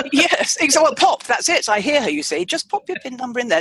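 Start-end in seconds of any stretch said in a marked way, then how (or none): 2.5-3.6 put-on light lovely female tone, faster. Praising a woman's use of the word pop, imitating her lovely light tone. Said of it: "She's got this lovely light tone".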